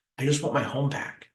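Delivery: heartfelt, pleading tone. Contrasting a business transaction with the emotional way to say it: emotional plea. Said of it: "emotionally, I could say".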